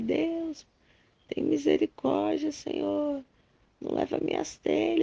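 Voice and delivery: high, desperate, pleading cry. Retelling crying out to god as the house was threatened: imitating own crying out to god. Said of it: "aí eu comecei a clamar".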